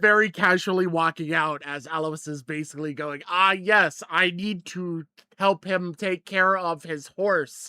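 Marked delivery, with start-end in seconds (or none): 3.3-7.7 slow, fake-casual, not really casual tone. Voicing a character escorting someone out: fake casual tone. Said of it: "a casual but not actually casual speech tone".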